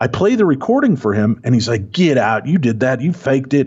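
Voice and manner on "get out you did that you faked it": hammy, cheesy, corny put-on Southern accent. Retelling how a man reacted to hearing the recording, in a corny Southern accent. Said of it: "I'm doing such a corny Southern accent".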